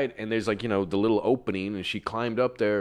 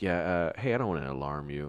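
hushed, careful, voice kept down; 5 semitones lower, 7 dB quieter than usual. Retelling warning a teacher quietly about someone in the ceiling: retelling speaking in a hushed voice. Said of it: "trying to keep my voice down".

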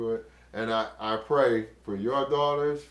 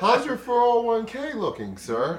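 put-on, very high, loud, courteous sing-song voice; 11 semitones higher, 5 dB louder than usual.

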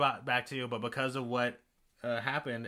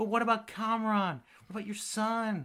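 put-on dramatic pleading, higher pitch; 8 semitones higher than usual. Retelling a character's plea to another character: imitating Kamala's dramatic plea. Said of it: "trying to do a whole dramatic thing".

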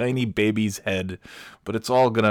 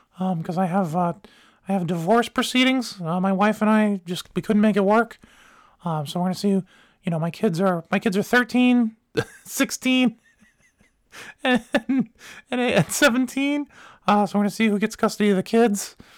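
put-on childlike unbroken voice, much higher; 11 semitones higher than usual. Retelling what a divorcing father said, imitating a man's unbroken voice. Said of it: "everything else had gotten into adult status except the voice".

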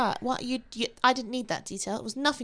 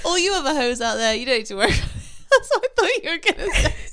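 giggling, can't stop laughing, laughing through the words; 3 semitones higher than usual. Cracking up over a misheard word: can't stop laughing. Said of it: "I can't stop laughing".

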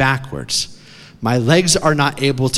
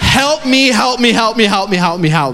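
mock very high, shrill, repeated full-lung shrieking; 9 semitones higher, 4 dB louder than usual. Retelling being wedged in a rock inside a cave, retelling a scream. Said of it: "i scream to the top of my lungs".

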